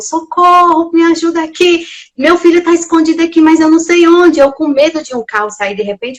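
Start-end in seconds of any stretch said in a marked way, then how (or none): 0.0-4.4 acted-out loud, high cry. Retelling asking people in the street for help: retelling shouting for help. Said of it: "porque eu gritava na rua".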